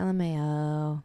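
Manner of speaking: low flat deadpan monotone, final O dragged out. Describing how a friend says LMAO aloud: deadpan monotone, drawn-out O. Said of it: "you drag out the O. You're like, LMAO. ... you say it in the most, like, deadpan, monotone voice".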